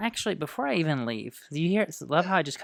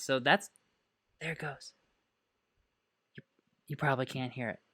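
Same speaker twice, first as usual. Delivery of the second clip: soft, hushed half-whisper under the breath; 6 dB quieter than usual. Showing viewers a sound on a calm day, half-whispering to hear it; half-whispering. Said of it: "I'm I'm whispering".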